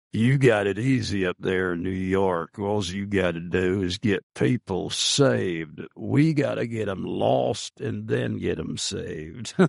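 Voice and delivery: put-on very deep, low, rough, gravelly old-man rumble. Retelling a conversation from new york, the speaker quotes a man in a deep gravelly voice. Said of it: "with his very deep, gravelly voice".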